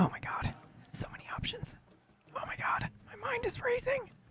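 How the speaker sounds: hushed whisper. Reacting excitedly while muted so others cannot hear: whispering. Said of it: "I don't know why I'm whispering".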